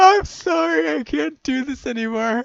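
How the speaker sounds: high, loud, slow, helpless laughing fit. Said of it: "I'm laughing so hard".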